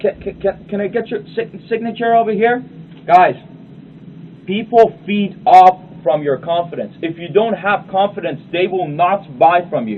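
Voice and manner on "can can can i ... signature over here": nervous stammering mumble, hesitant, pitched up. Acting out asking for a signature at the closing: put-on nervous stammering. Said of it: "we tend to mumble a lot".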